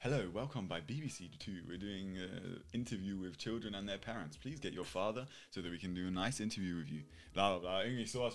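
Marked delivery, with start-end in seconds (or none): 0.0-7.0 put-on radio announcer voice with presenter patter. Speaker reenacting a planned call to random strangers, radio announcer voice. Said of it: "versucht so ein bisschen so eine Radiostimme".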